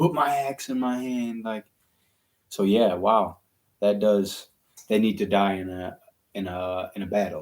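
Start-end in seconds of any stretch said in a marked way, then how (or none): 0.0-1.4 imitated scream of a dying warrior. Retelling a battle scene from a show: imitating a dying man screaming. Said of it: "he's screaming it".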